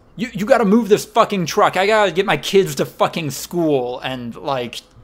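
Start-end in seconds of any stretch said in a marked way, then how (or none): 0.2-4.0 mock screaming, loud and shrill. The speaker acts out a mother yelling at workers blocking her way, retelling someone yelling. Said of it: "She starts yelling at the workers".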